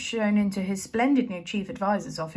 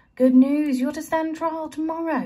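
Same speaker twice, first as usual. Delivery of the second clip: brisk, raised, lifted and loud; 6 semitones higher, 5 dB louder than usual. Spittleworth addresses the prisoners while the warder snoozes; brisk. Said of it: "said Spittleworth briskly".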